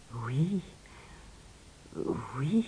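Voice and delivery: soft, mumbled, muttered under the breath. Reading a fairy tale aloud, a king answers a dwarf demanding his daughter: muttering. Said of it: "marmonna le roi qui était devenu livide".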